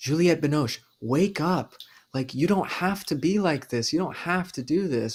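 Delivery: urgent, loud yelling. Retelling yelling at the screen during a movie: imitating own yelling at screen. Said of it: "I'm yelling at my screen going like".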